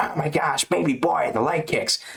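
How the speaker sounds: ringside fight-commentator style calling delivery. Talking about a fight's leg kicks, redoing the commentary: Bisping commentary impression. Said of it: "I sounded like uh, Bisping there".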